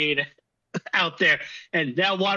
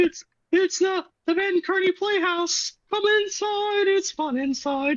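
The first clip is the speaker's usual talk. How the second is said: very high-pitched cartoon mouse character voice; 14 semitones higher than usual. On a podcast, one host breaks into a Mickey Mouse voice. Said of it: "we delve into like Mickey Mouse".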